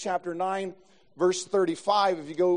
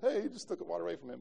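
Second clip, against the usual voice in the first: mocking chuckle muttered under the breath, much quieter; 12 dB quieter than usual. Retelling what the guy who took the rebound said, mockingly chuckled under his breath. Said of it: "mockingly chuckled under his breath and said".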